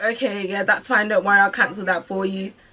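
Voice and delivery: irritated, bothered, put-out tone. Retelling a phone call where someone agreed to cancel: imitating someone sounding bothered. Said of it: "she sounded so bothered".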